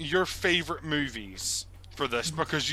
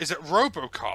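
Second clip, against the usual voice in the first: usual speaking voice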